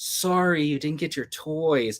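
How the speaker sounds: put-on snide reading. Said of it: "And then I read it like".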